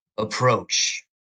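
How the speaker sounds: harsh, rough, rasping voice. Retelling a figure on a throne as knights open the door, rough voice. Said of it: "he has this, like, rough voice where he's like".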